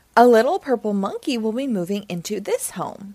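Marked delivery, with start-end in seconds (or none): none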